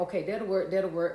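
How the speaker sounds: usual speaking voice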